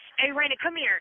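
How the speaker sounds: put-on angry light yell. Retelling how someone called out during a parking lot argument: imitating someone yelling. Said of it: "he's at the top of his lungs, yelling at her".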